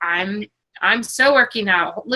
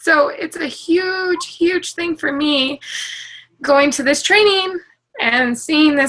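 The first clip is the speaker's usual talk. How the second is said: tearful, pitched-up voice talking through fresh crying; 6 semitones higher than usual. Sharing being demoted at work, crying. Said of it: "I hate the way I'm looking while I'm crying right now".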